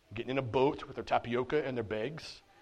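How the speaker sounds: Minnesotan accent. Telling the story of Barnabas and John Mark, in a Minnesotan accent. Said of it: "That's my best Minnesotan accent".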